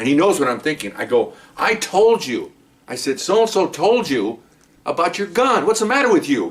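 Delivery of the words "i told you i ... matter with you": acted-out high scolding yell, worried anger. Retelling scolding a partner after a robbery, imitating own angry yell. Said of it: "now I'm yelling at him".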